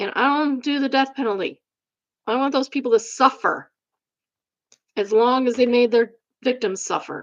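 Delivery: heated, agitated, worked-up angry voice. Ranting before stopping to calm down: worked up and angry. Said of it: "I gotta calm down".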